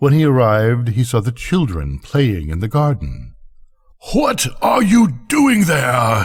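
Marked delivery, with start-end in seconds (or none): 4.1-6.2 very gruff giant voice, very high cry. The giant returns to find children in his garden and cries out, very gruff. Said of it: "he cried in a very gruff voice".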